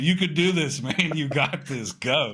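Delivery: put-on, urging, encouraging yell. Before a phone call, pumping oneself up: retelling yelling at myself. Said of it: "I was yelling at myself".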